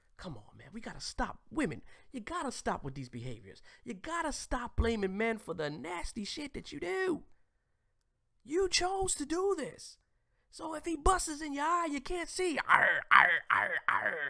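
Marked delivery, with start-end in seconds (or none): 12.6-14.3 mock pirate voice, louder. Joking that someone now looks like a pirate: put-on pirate voice. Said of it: "And you're looking like a pirate".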